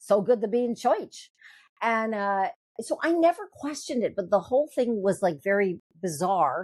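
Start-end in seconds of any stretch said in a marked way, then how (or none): 0.0-1.3 put-on German accent. Retelling how the parents greeted the priest at church, imitating mother's German accent. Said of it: "She talked like this".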